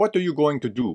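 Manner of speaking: bad New Jersey accent.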